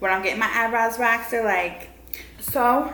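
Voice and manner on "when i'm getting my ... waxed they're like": ordinary delivery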